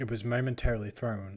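plain

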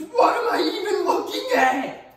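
piercing, shrill drawn-out scream, very high, very loud. Retelling a show character's reaction to a gross monster: imitating a scream. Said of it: "his reaction in the show is he screams".

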